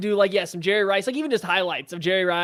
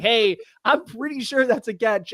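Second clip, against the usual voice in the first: mock shouting, slow and drawn-out yell; 4 semitones higher than usual. Retelling calling down the stairs to dad at night: retelling own past yell. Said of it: "yelling down the stairs to my dad".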